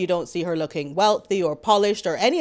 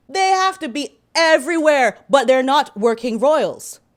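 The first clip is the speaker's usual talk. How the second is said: outright yelling, loud and high-pitched; 5 semitones higher, 5 dB louder than usual. A host getting worked up while covering royal news: shouting. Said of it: "I'm shouting".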